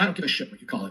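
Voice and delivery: normal talking voice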